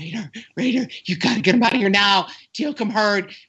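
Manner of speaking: mock-breathless, out of breath. Telling a story and quoting a man, imitating someone out of breath. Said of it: "he's all out of breath going".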